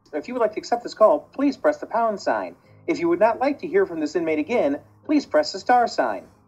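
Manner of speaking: machine-like, computerized, automated recorded voice. Retelling a recorded prison call message heard as a child, computerized voice. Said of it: "I hear a computerized voice say".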